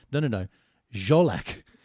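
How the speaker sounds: loud, angry, exasperated, insistent voice. Retelling a friend correcting how his name is pronounced: imitating an angry friend. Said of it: "he was getting angrier".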